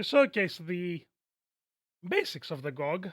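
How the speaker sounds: cracked, breaking voice. Introducing a gameplay showcase on a video, voice cracking. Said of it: "sorry for the voice crack".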